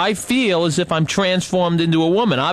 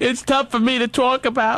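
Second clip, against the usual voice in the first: high, tearful crying voice; 7 semitones higher than usual. Being comforted by the other speaker, the person says this while crying. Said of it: "Please don't cry".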